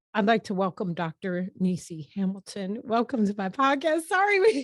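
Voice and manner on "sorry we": high, loud, laughing through the words. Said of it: "we were cracking up".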